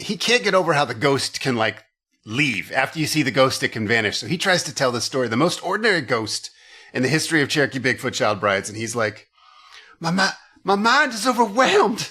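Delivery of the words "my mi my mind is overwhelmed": high, slow, weepy blubbering voice. Retelling Buck trying to tell the ghost story: imitating Buck blubbering. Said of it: "This blubbering idiot, this weeping baby cow".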